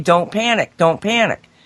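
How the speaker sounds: ordinary talk, nothing marked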